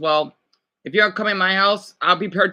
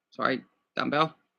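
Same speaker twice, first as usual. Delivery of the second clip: plain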